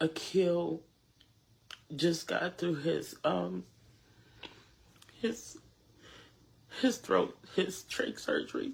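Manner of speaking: crying while speaking, tearful. Thanking supporters and giving an update on someone's surgery, crying while speaking. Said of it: "I'm sorry for crying".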